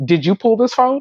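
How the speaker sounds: acted, irate, accusing tone. Retelling how the manager questioned the sales associate: imitating an angry tone. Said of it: "his tone was so angry".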